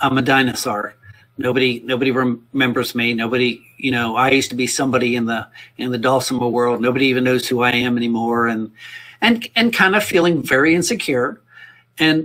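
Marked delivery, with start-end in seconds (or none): none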